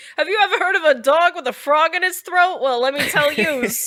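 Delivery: put-on New York accent. During a word-association bit, speaker slips into a Rodney Dangerfield-style New York accent. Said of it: "I don't know why I'm from New York".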